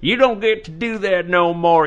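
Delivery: put-on, high Texas accent with drawl. Talking about a doctor who was banned, repeating a line in a Texan accent. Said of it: "I don't know why I sound like a Texan when I say that".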